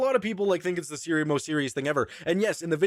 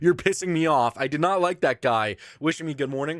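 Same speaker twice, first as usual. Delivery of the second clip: usual speaking voice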